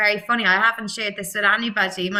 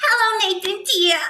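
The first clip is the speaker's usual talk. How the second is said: put-on very high, fun, playful girly character voice; 12 semitones higher than usual. Recalling a show character she soaked up, the speaker does a playful girly character voice. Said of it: "really fun, really girly".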